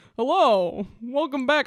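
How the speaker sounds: put-on dog show announcer voice. Acting out a turkey man hosting a dog show: Westminster dog show announcer voice. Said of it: "nice Westminster dog show announcer voice".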